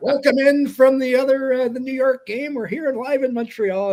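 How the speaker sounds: high, loud, even-pitched play-by-play announcer impression.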